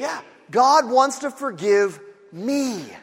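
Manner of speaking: slow, emphatic, earnest delivery.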